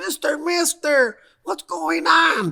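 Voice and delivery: mock very high, slow, frightened kid's voice. Retelling kids grabbing and hugging him, imitating scared kids. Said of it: "some kids were scared".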